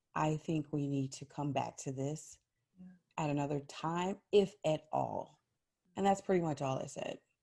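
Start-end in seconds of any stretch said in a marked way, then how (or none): 0.1-5.4 very calming, soothing tone, low voice. Recalling people too upset to keep talking, retelling a calm, lowered voice. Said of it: "in a very calming voice, I actually got lower".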